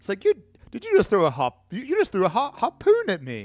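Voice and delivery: exaggerated British accent. Retelling what he said after the harpoon, in an extra British voice. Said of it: "he says it in like an extra British voice".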